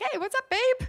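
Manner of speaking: very high, perky, chirpy voice.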